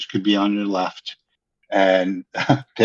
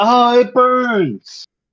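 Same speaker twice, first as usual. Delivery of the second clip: play-acted shrill pained scream, very high; 5 dB louder than usual. Narrating a fight as the pirate cries out, screaming out in pain. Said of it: "he screams out".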